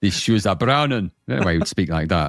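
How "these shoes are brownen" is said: put-on Russian accent. Playing the character Glonkov the Russian in a comedy bit, mock Russian accent. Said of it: "That's not how Russians speak at all".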